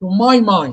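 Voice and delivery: heavy stress on the word my. Expressing your own beliefs in a phrase, stress on my. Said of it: "you stress the word that refer to you".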